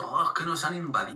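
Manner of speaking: ordinary talk, nothing marked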